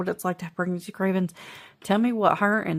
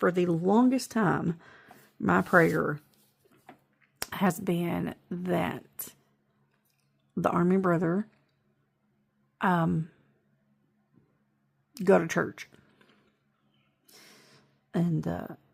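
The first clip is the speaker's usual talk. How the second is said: tearful voice, crying while speaking. Sharing news about a brother's baptism, crying while talking. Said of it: "I'm gonna cry saying it".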